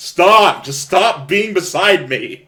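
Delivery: lively, excitable, animated, high outburst. Voicing a character telling a companion to stop being beside him: animated. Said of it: "as animated as he's always been".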